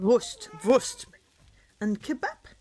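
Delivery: put-on German accent. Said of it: "my German accent was never as good".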